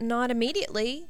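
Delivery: faintly hopeful. Reading a character's brief reply in a story, slightly hopeful. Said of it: "sounding slightly hopeful".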